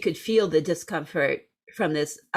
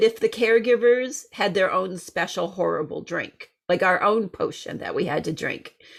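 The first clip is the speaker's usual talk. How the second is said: ordinary delivery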